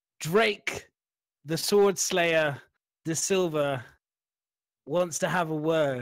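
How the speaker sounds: booming, loud announcer-style call. Showing how the message for Drake should be called out there: really loud booming announcement. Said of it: "Really loud".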